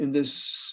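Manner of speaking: ordinary delivery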